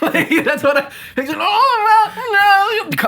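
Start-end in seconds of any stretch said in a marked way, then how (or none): 1.4-3.1 put-on British baby voice, higher pitched. Joking about british babies being born grown-up: imitating a british newborn. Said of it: "that's my rendition of a baby coming out".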